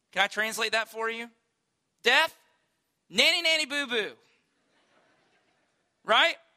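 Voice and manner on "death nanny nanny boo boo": mock, pitched-up, childish jeering tone. Retelling how Paul taunts death: imitating a mocking taunt. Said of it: "he begins to mock death".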